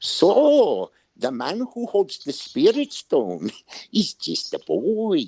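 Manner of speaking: put-on high voice with swooping, swinging pitch. Performing a requested line in a character's voice: Greedo's voice. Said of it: "but do it in Greedo's voice".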